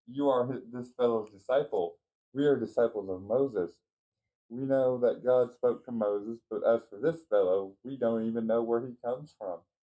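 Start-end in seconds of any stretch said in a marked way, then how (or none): none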